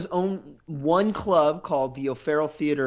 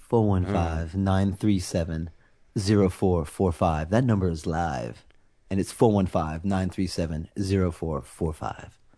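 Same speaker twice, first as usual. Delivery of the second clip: seductive, very low sexy voice; 9 semitones lower than usual. Reading the show's phone number out to listeners: sexy voice. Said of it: "I like to use my sexy voice".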